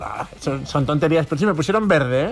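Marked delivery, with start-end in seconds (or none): none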